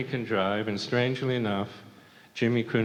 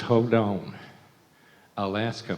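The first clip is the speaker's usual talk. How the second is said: slow, thick, heavy Southern drawl. Retelling his wife on the phone when he came home, in Nancy's southern accent. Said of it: "Nancy talks really uh, southern accent".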